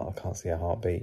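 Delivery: hushed imitated whisper. Retelling what Sam said under her breath, whispering under her breath. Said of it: "Sam whispered under her breath".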